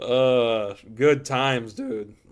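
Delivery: slow voice cracking mid-phrase. Quoting another person's reply while telling a story, voice cracking. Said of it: "Wow, voice crack".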